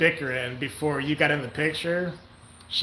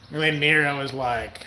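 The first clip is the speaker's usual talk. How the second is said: normal talking voice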